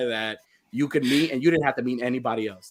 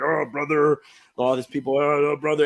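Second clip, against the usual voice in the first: put-on celebrity voice, casual and chatty; 2 semitones higher than usual. Retelling a convention wait, imitating Hulk Hogan. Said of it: "Hulk Hogan is there, and he's, like, talking".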